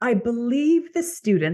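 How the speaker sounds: put-on posh British accent. Quoting a man's feedback at the end of class, in a very proper british accent. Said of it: "imagine this is a very proper British accent".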